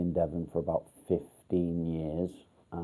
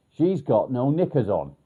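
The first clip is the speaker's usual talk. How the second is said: very loud, high, top-of-the-voice yell; 7 semitones higher, 10 dB louder than usual. Retelling shouting out in a supermarket: imitating own shout at top of voice. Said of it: "I shouted out at the top of my voice".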